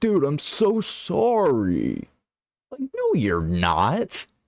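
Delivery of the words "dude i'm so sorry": very high, slow, swooping, drawn-out put-on sincerity. Mocking an apology, acting like he cares so much: mocking Logan Paul's fake sincerity. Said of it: "he acts like he cares so much".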